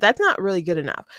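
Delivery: ordinary talk, nothing marked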